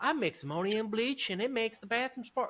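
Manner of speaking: very high-pitched cartoon character voice. Retelling a favorite King of the Hill moment: imitating Peggy Hill. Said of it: "Peggy is talking to Hank ... she'd be like".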